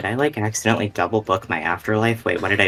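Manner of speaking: muttering very quietly under his breath. Voicing a character staring at a lion cub: very quietly under his breath. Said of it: "very quietly under his breath goes".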